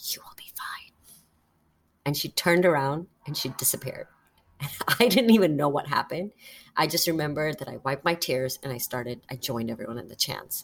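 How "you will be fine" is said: very quiet, hushed whisper, very close. Retelling how a woman in a crowd hugged the speaker: retold whisper. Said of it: "whispers in my ear".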